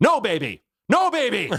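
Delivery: put-on very high, loud, sing-song toddler shout. Telling how Rose spoke up about a screaming baby, imitating Rose, a toddler. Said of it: "Rose goes".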